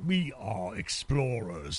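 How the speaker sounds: very deep villain voice, dropped low. Trading movie lines with another speaker, doing a Pinhead impression. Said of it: "That's my Pinhead impression".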